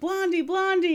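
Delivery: mock frantic, desperate, high screaming. Retelling the scene where Tuco is left balancing on a cross: retelling Tuco screaming. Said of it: "he's screaming like".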